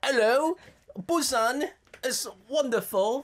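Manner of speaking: clumsy fake British accent. Two speakers admit they are terrible at accents, then try one: bad British accent. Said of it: "We can't do British accents either".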